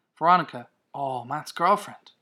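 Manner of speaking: ordinary delivery, nothing marked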